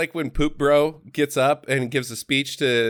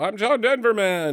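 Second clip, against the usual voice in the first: whiny, plaintive, high-pitched voice; 6 semitones higher than usual. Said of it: "the dulcet tones of his whiny voice".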